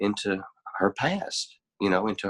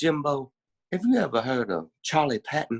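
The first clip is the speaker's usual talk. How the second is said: put-on accent from the Delta; 5 semitones higher than usual. Retelling a question your grandmother asked you, imitating grandmother's high Delta accent. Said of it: "in that high Delta accent".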